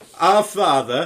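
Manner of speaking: very loud, high attempted Yorkshire accent. Told by the other speaker to make it Yorkshire: attempted Yorkshire accent. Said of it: "I'm trying to do Yorkshire".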